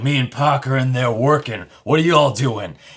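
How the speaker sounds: angry but buttery-smooth, resonant voice. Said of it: "Even when he was angry, he's like".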